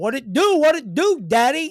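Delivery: put-on Bronx accent. Quoting a Bronx-born man as he comes into the speaker's house, thick Bronx accent. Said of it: "has the thickest Bronx accent and comes in".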